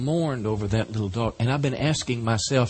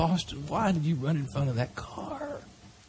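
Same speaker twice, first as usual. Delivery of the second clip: mock crying, high and tearful throughout; 6 semitones higher, 5 dB quieter than usual. Retelling words said at a dog's grave: reenacting crying words to a dog. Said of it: "I'm digging a hole for this little dog and I'm crying".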